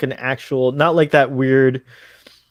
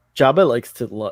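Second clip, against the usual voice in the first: ordinary talk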